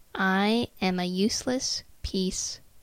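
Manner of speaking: usual speaking voice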